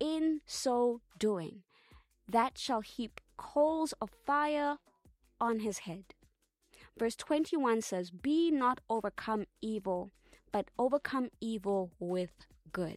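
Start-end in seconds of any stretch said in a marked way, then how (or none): 0.0-6.0 slow, measured, unhurried, deliberate delivery. Speaking to listeners about a verse so they get the point: speaking slowly. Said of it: "I'm saying this slowly so we can get the point".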